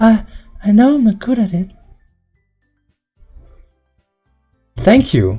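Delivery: timid, peaceful delivery. Voicing Yuri thanking someone for cheering her up: timid and peaceful Yuri voice. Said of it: "trying my best to give the timid and peaceful voice".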